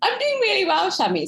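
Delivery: laughing through the words. In a playful practice conversation, answering the other speaker's greeting, giggling while talking. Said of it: "Sorry, I'm giggling".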